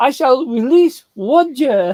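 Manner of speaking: high, slow, exaggerated speech-impediment voice. Quoting a film character with the same impediment: Pontius Pilate speech impediment. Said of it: "he has that same speech impediment".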